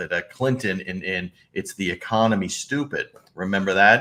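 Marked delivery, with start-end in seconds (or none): none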